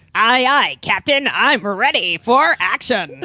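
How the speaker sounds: very loud, slow tiny hero sidekick voice. Voicing the tiny sidekick answering the hero: little hero man voice. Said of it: "you can voice little hero man".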